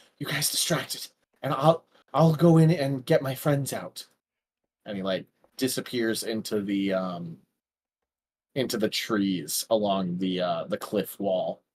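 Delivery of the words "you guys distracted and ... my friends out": hushed, half-whispered, under the breath. Narrating Riffle half-whispering his plan to the players, Riffle half-whispering. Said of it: "He like whispers to you".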